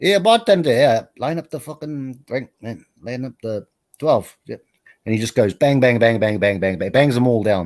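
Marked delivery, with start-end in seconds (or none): 0.0-4.4 put-on Irish brogue accent. Telling a joke, voicing a man calling to the bartender, in a put-on irish accent. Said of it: "It's my best Irish voice".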